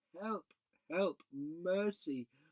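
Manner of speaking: weak, feeble, high crying out. Reading a story, the witch cries out to the children leaving her; faint voice. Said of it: "cried the witch in a faint voice".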